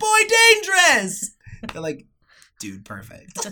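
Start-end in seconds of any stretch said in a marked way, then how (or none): 0.0-1.3 shrill, full-volume yell like an Italian man. Retelling telling family about a toy got for Bert: yelling like an Italian man. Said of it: "I'm yelling at like a fucking Italian man".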